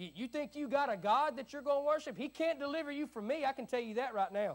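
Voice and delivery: high, sarcastic, smart-aleck taunting tone. Acting out the king questioning the young men: imitating a sarcastic Nebuchadnezzar. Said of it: "a smart aleck, sarcastic, kind of rhetorical question".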